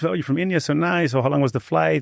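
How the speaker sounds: high, friendly, overly nice, eager-to-please chatter. Retelling own first words to her after her flight: imitating own friendly tone. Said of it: "I was trying to be nice".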